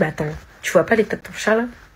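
ordinary delivery

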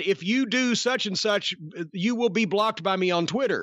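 usual speaking voice

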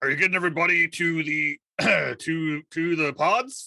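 put-on gruff captain voice. In a role-play, pretending to be the captain while wearing his hat, in a gruff captain voice. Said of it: "put on my best gruff captain voice".

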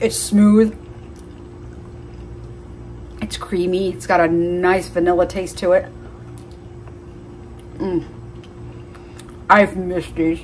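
talking with mouth full. Tasting a freshly picked ice cream banana, talking with mouth full. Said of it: "Shouldn't talk with my mouth full".

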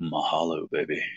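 soft, very sexy, seductive put-on voice. Voicing what a man flashing a double shaka is saying: put-on very sexy voice. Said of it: "he's saying in a very sexy voice".

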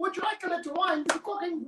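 put-on Irish accent, very high-pitched. Echoing the other speaker's line, in an irish accent. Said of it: "I'll do the Irish one".

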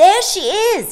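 sudden outburst, very high, very loud, excited. Michael suddenly spots the bird woman, cried out with excitement. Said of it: "cried Michael suddenly, and he danced on his toes with excitement".

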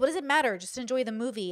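ordinary delivery

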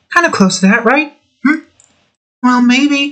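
refined, elegant lady voice, very high-pitched. Speaker tries out a voice they did easily when younger, elegant woman's voice. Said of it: "like a little bit of an elegant woman's voice".

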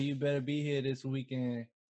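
ordinary talk

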